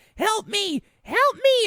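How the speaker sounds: very high-pitched, pleading cry.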